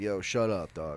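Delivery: mock-joking tone. Retelling what a guy in a parking lot said to his friend, retelling a joking remark.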